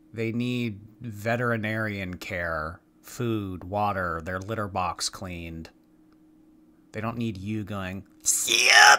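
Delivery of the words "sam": high, loud, mocking cat-talk voice, shouted way up. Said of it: "What the F was that voice?".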